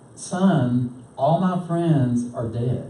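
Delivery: ordinary talk, nothing marked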